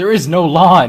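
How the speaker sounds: flat, loud, high, drawn-out shout. Answering the third Gorn Elder after a shouted order: yelling. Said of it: "Why are you yelling at me".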